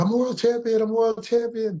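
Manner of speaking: shouted hard at a very high pitch. Retelling holding Josh against the cage after a fight, re-enacting his own yelling. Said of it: "and I'm yelling".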